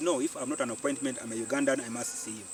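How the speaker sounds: normal talking voice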